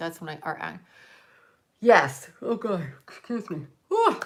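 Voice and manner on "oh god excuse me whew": words swallowed by a yawn. Exhausted on a Friday night, the speaker yawns mid-story and apologizes. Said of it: "I apologize for my yawning".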